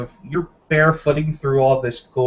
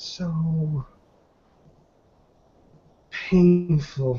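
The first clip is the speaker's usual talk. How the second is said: faint half-whisper with "so" stretched out; 3 semitones higher, 4 dB quieter than usual. With blood coming out of her nose, she speaks: half-whispering. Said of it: "she just kind of whispers".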